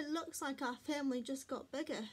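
plain reading voice

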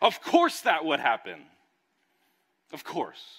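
full-throated, very loud, high top-of-lungs yell. Recounting a frustrating day when the keys hit the front door: retelling a yell. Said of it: "I yelled at the top of my lungs".

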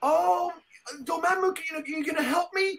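mock pleading, high god voice.

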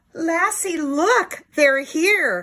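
excited, high, loud, drawn-out shouting. Narrator reading a Lassie book, as the boy Timmy calls to Lassie: shouting. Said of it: "Timmy shouted".

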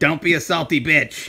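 spooky, scary, possessed toy-like voice. Showing the others what a possessed bird says: imitating a possessed bird toy. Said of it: "It says like this".

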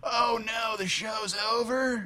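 put-on California stoner accent. Host imagining european listeners reacting to the show ending, california stoner accent. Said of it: "they would have a California weed smoker's accent".

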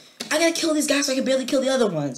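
high, fast, frantic exclamation.

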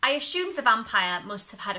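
plain

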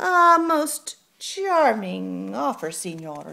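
bone-dry, slow, unhurried delivery. Narrating the cockroach answering the rooster suitor's offer, dryly. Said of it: "she said dryly".

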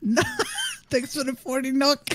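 very high, swooping, giggly speech broken by laughs. Thanking chat for forty nook, laughing while talking. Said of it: "He's laughing at currencies now".

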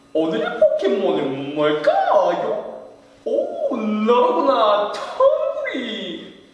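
very high, loud, sing-song voice. A guest announces and performs a Pokémon character impression, Professor Oak impression. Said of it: "박사님 성대모사를 한번 해보겠습니다".

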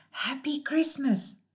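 timid, shy, high-pitched little half-whisper. Narrator reading a Moomin story, voicing the Woody: shy half-whisper. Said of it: "the Woody shyly whispered".

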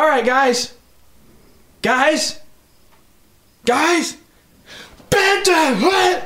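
very high, drawn-out, fed-up, pissed-off tone. Retelling a man on the bus trying to get the kids' attention, mock super pissed. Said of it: "super pissed".

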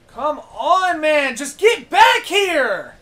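high, slow, furious yell.

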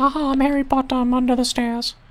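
very high, derisive, mocking put-on voice. Playing a video game, the speaker jokes about the stairs in a mocking voice. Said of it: "so I can mockingly be like".

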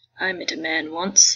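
put-on elderly woman character voice. Performing the last piece, rugged path, in an old lady voice. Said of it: "where I get to put on my old lady voice".

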